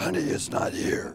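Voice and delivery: put-on slow, hushed, breathy preteen girl's voice. Retelling the daughter at eleven or twelve answering her father, imitating a preteen's changed voice. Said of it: "And this voice would say".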